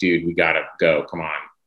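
normal talking voice

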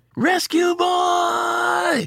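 high, long, drawn-out, slow yell.

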